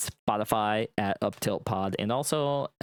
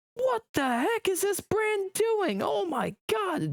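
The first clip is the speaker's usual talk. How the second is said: put-on over-the-top aggressive outburst, very high, swooping. Retelling how a friend reacted to a game mistake: imitating an over-the-top angry friend. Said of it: "Just very over the top aggro".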